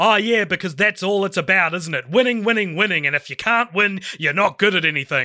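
scornful, sarcastic, acted yelling rant. Retelling a film scene where he yells at his old coach: imitating Gordon Bombay yelling sarcastically. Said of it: "he's yelling at his old coach".

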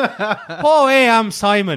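put-on Canadian accent, high-pitched and loud. Voicing a hypothetical weird Canadian guy, mock Canadian accent. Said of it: "That's more Fargo".

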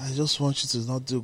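put-on soft, coaxing, babying coo.

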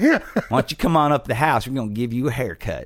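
creepy, menacing, taunting rural voice. Imitating teenage rednecks shouting from a truck: creepy redneck voice. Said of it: "that was creepy".

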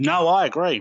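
talking with mouth full. Agreeing with the other speaker while eating a brownie, talking with mouth full. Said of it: "I'm eating brownie at the moment".

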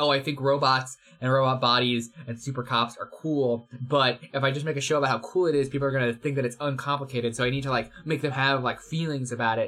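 ordinary talk

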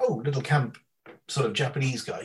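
ordinary talk

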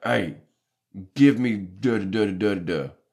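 super loud, blaring, high-pitched shout. Recounting waiting in a McDonald's line, imitating the customer ahead speaking super loud. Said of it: "like super loud".

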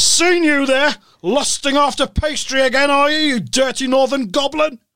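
very high, squeaky politician voice. Retelling meeting someone in a bakery section: imitating Jeremy Corbyn. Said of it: "He says".

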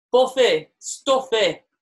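Barnsley vowels on single words. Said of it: "your northern Barnsley accent".

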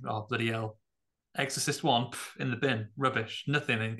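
ordinary talk, nothing marked

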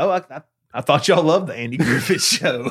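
imitated deadpan delivery. Retelling a joke told to a sunday school class: retelling own deadpan line. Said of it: "when I said that and it was just deadpan".

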